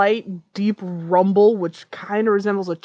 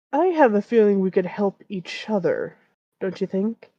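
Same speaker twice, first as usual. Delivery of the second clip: quiet, deep dragon voice. Voicing the gold dragon speaking to the others, deep yet quiet dragon voice. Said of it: "booms out in a uh, deep yet quiet uh, voice".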